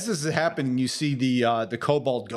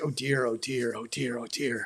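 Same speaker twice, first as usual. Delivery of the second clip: soft, anxious, fretful, repeated mumbling; 6 dB quieter than usual. Voicing a worried kobold pacing and muttering to himself: worried muttering kobold. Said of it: "is muttering to himself".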